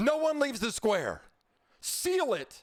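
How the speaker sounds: very high-pitched, sing-song voice with swooping pitch. Narrating a scene to a player, the guard speaks: voicing the guard. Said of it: "the guard looks around and he says".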